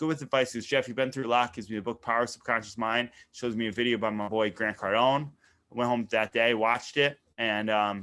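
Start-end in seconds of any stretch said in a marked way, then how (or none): none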